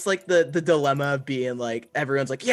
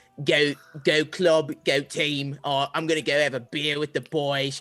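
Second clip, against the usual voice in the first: dim-sounding put-on Cockney accent, drunk and rowdy. Playing a drunk football hooligan, stupid put-on cockney accent. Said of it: "a stupid Cockney accent where I talk like this".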